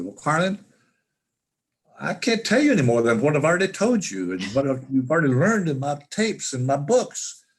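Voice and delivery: put-on Australian accent, rattled off quickly and high. Retelling a phone call, quoting the man he called, in Jim Glennon's Australian accent. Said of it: "in his Australian accent".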